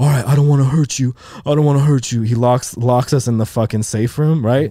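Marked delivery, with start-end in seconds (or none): 0.0-2.2 put-on nervous, shaky, trembling, scared voice. Retelling a robbery, quoting the gunman: imitating a shaky, scared robber. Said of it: "He's all shaky and scared".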